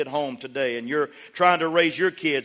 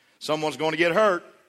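plain

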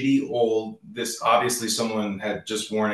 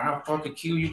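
put-on Southern drawl, higher pitch; 6 semitones higher, 3 dB quieter than usual. Retelling two workers wrestling in a client's front yard: imitating a Southern drawl. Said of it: "the Southern drawl and everything".

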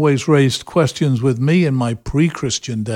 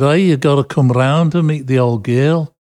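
put-on Liverpool accent. Quoting a former youth group member inviting him round, imitating Clinton's Liverpool accent. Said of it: "speaking in his Liverpudlian accent".

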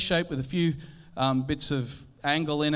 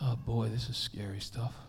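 mock muttering under breath, lower and quieter; 5 semitones lower, 8 dB quieter than usual. Retelling what the engineer said as the weight was lowered: imitating someone muttering under breath. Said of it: "just under his breath".

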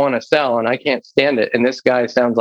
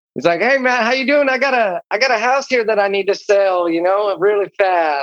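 country hillbilly voice, higher pitch, slower pace; 8 semitones higher than usual. As the character Bo McDougal making a phone call, in a funny country hillbilly voice. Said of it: "he just got a funny voice".

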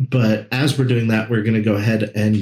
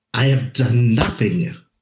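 put-on Persian accent. In a role-play scene, a character answers being asked what he did, Persian accent. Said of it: "he says in his Persian accent".

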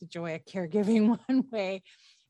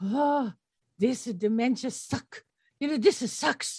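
put-on faint Japanese accent; 4 semitones higher than usual. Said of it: "with her little Japanese accent".

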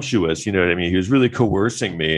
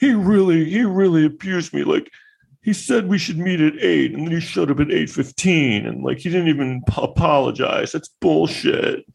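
high, scornful, mocking woman's voice; 9 semitones higher than usual. Acting out a complaint before calling it an impression of a woman: mocking impression of a woman. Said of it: "That's my impression of a woman".

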